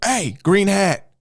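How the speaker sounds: mock shouted call, very high yell. Retelling how the dude at the metal detector called out: imitating someone yelling. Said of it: "like, yells, he goes".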